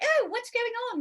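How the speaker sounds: very high-pitched, affected put-on British accent. Imitating a daughter's line from her scene: imitating a british accent. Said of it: "she talks like this".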